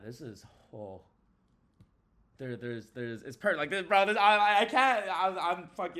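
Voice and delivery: very loud, excited stammering, tripping over words, rising. A streamer reacts to a game system shown on stream, with excited stuttering. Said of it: "I'm stuttering because I'm excited".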